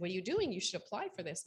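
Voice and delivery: ordinary talk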